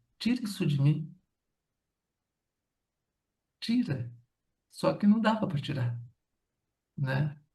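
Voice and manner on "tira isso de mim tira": play-acted thick, choked-up, pleading voice. Recounting what a hospitalized woman said to the speaker; imitating a choked-up voice. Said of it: "com a voz bem embargada".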